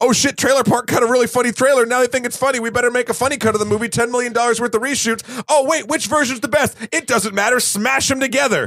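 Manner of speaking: high, fast, mocking voice.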